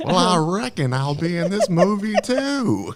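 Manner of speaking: thick, exaggerated heavy drawl, pitched very high. Recapping a movie, mimicking the cowboy-dressed character: super heavy drawl. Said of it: "with the super heavy drawl".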